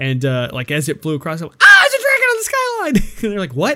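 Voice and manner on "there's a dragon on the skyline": acted scream, much higher and louder. Watching with friends, the speaker acts out their own past scream. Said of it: "I screamed out".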